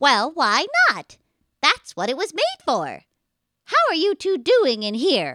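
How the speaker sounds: loud storybook witch character voice. Trying out voices on the same line, this take as a witch voice. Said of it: "More of a witch voice".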